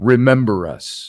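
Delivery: gruff male voice. Retelling what a voice said on the spirit box: imitating a gruff man's voice. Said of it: "a gruff man's voice said".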